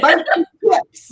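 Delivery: bad, very high-pitched put-on British accent. Mocking the other speaker's British impression: imitating a bad British accent. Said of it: "It was like".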